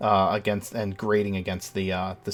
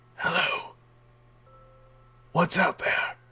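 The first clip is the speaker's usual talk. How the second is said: parched, raspy, very high voice; 9 semitones higher than usual. Game narrator voices a gaunt figure calling out after hearing a noise, dry, raspy voice. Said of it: "in a dry, raspy voice that sounds like it hasn't drank water in ages".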